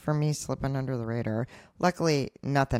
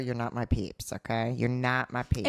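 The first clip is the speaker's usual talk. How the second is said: ordinary talk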